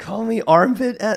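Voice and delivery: high voice, breaking and cracking. Chatting casually with friends, voice cracking mid-sentence. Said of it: "Sorry, voice crack".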